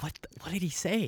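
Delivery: very quiet, barely audible whisper. Retelling what the group said about a missed joke: imitating a whisper. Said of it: "we're whispering".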